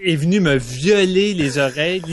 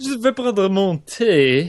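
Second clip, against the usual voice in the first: bad, over-the-top, exaggerated snobbish upper-class accent; 2 semitones higher than usual. Mocking a son's partner with an irritating accent: exaggerated aristocratic accent. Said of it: "avec un accent irritant vraiment euh, raté, là ... Vraiment, là, aristocrate au bout".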